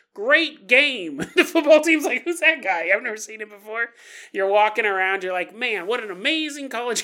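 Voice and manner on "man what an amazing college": geeky, nerd-style voice. Acting out someone walking around a college campus, in a nerdy voice. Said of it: "I don't know why you sound like a nerd".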